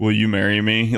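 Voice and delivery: acted utterly flat, level, emotionless monotone. Retelling how a man asked her friend to marry him, most monotone voice. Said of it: "he said it in like the most monotone voice".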